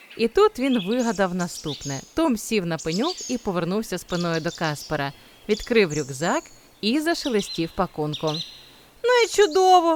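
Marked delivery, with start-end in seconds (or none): 9.1-10.0 loud, very high-pitched exclaiming. Tom sits with his back to the sleeping Kaspar and speaks, said loudly. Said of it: "голосно сказав він".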